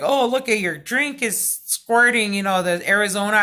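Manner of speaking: ordinary talk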